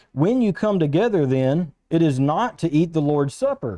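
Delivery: ordinary talk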